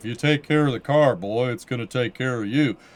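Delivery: put-on Texan drawl. Rephrasing advice the way a character would say it: Hank Hill voice. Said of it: "if you said it in like a Hank Hill".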